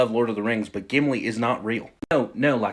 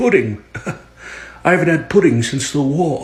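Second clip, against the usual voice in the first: put-on British accent, old man voice, raised; 5 semitones higher, 7 dB louder than usual. As the grandpa, reacting to being brought a pudding cup, in a British accent. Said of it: "Are you doing a British accent?".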